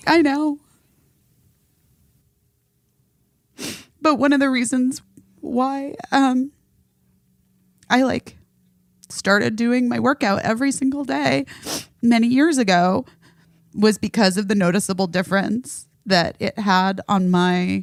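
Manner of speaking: starting to cry. Explaining why a daily workout helps their anxiety, starting to cry. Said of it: "oh no, I'm gonna cry".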